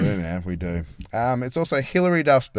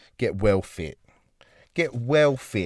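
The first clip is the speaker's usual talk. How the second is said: jokey put-on British accent. Co-hosts going over Women's Health and Fitness Day, in a put-on British accent. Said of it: "off to Britain now, are we?".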